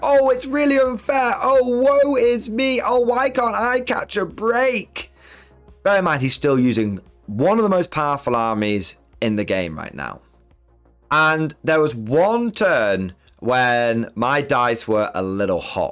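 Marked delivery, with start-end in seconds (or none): 0.0-5.1 very high, self-pitying, wheedling whine. Retelling how an opponent acted when his tantrum didn't work, mock-whining. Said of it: "He started whining and wheedling and getting all upset and sad and being like".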